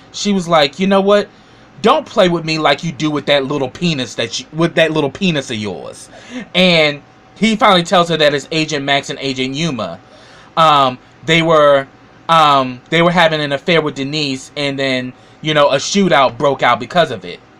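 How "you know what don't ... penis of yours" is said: ordinary delivery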